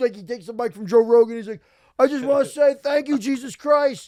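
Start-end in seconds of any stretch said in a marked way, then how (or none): 2.0-4.1 put-on mimicking drunk talk, higher and louder. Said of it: "He's drunk".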